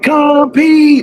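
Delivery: shrill, very high, sharp yell. Recounting calling everyone back after a practice break, yelled 'compete'. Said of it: "I just yell like that".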